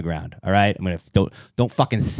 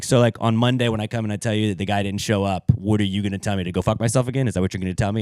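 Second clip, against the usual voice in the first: usual speaking voice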